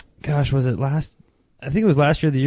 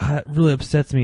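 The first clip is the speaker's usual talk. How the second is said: ordinary talk, nothing marked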